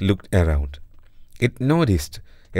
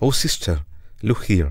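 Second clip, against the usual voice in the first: plain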